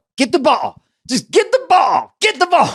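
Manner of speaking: mock very high, rising holler. Retelling how a dad at kids' basketball games yelled: imitating a dad yelling. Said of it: "all he would do was yell".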